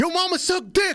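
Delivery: quick, fast, high shouted yell. Retelling how a wrestler answered a heckling fan: imitating Jacob Fatu yelling. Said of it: "Jacob Fatu yelled".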